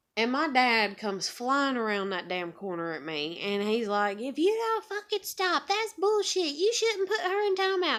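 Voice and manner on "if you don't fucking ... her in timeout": put-on, very high-pitched, furious angry rant. Telling a story, the speaker imitates her dad going off at her: imitating someone going off. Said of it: "going off on me about my parenting".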